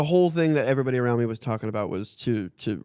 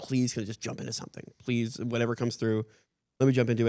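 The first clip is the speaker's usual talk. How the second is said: mock-begging, pleading tone, quieter; 4 dB quieter than usual. Retelling how you begged them to let you start work, acting out begging. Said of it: "I was just begging".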